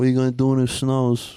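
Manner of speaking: imitated New York accent. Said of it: "he had, like, a New York accent".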